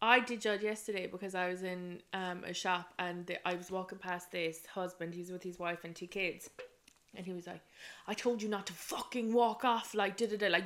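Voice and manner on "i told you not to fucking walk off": put-on aggressive man voice. Retelling a husband snapping at his wife in a shop: imitating an aggressive man. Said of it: "really aggressive".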